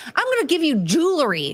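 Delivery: supremely confident boasting. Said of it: "So confident".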